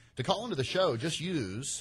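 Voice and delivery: radio announcer voice, show-host announcing tone. Show host explaining how listeners call in, slipping into an announcer voice. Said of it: "did my voice change there?".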